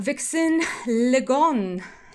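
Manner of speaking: slight French accent. Greeting people by name, saying one name with a little French accent. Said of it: "I'm giving you a little French accent there".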